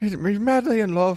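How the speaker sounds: put-on hazy Irish accent. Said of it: "my accent's a little hazy there".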